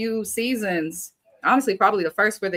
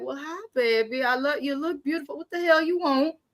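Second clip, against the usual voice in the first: put-on, higher-pitched grandma voice; 8 semitones higher than usual. Imitating grandma greeting a visitor during her show: imitating grandma. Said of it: "she'll probably be like".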